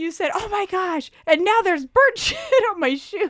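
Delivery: very high-pitched, words bubbling out through laughter. Retelling a funny moment to the other speaker, laughing while talking. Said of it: "I can't stop laughing".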